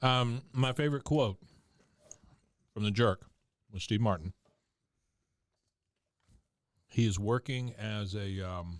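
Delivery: speaking with mouth full, through food. Recounting a favorite quote from The Jerk mid-bite: talking while chewing. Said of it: "I'm sorry, I'm still chewing".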